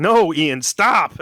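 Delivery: high-pitched put-on screaming. Retelling a reaction to a TV scene: imitating own past screaming. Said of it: "I am just screaming at the T V".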